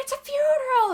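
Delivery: high-pitched mock yelling.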